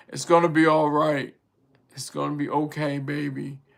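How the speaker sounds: husky strong voice. Retelling the lady boy comforting the passport bro, in a husky, strong voice. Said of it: "Real husky, strong voice".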